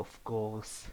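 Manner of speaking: sultry, seductive, come-hither, flirty voice. Retelling a story where she answers a question, in a mock-seductive voice. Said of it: "with a horny voice".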